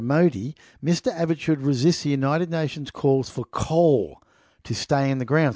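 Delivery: ordinary delivery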